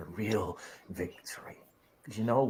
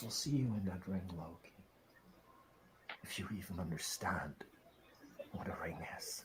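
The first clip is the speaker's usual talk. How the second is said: speaking in a whisper, quieter; 10 dB quieter than usual. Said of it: "It sounds like he's whispering so much".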